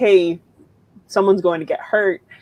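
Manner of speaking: usual speaking voice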